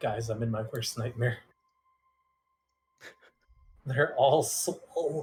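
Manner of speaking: low, quiet private aside over radio. Spotting the swole crew, speaking into comms to the team: quietly, into comms. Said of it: "just gonna quietly say into my comms".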